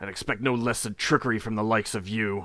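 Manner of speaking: loud, fast, snarling, growled orc voice. Voicing an orc who bares his fangs: growling orc voice. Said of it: "and growls".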